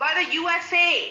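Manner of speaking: loud, insistent, spelled out, slow and deliberate. Repeating a question the other speaker says they can't hear: raised voice. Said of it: "You don't need to raise your voice".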